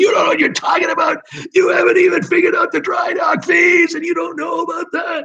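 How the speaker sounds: put-on, very high-pitched, shrill, indignant angry yelling. Acting out an imagined auditor's complaint: imitating someone yelling. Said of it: "He's yelling at me".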